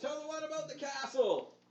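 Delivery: very high-pitched shouted call. Voicing the crowd calling requests to a performer: shouted request. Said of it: "several requests being shouted out".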